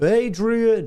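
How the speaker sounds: exclamation called out, pitched way up. Answering a viewer's request for a Rocky voice: Rocky voice. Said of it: "you want a Rocky voice?".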